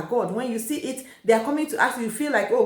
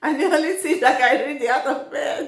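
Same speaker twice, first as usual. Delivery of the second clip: words broken up by laughter; 3 semitones higher than usual. Mid-talk, the speaker apologizes for laughing and keeps speaking, laughing while speaking. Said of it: "I'm sorry, I'm laughing".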